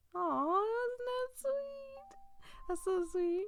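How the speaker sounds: high, drawn-out gushing coo on aw.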